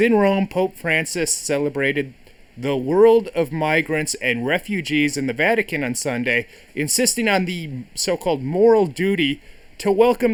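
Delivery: normal talking voice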